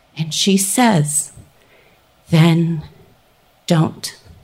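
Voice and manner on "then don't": put-on, incredibly calm, level voice. Retelling what a woman said in reply: imitating a calm steady voice. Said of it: "in this incredibly calm, steady voice".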